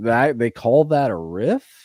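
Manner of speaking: slow, drawn-out, scoffing disbelief. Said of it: "and you're just like".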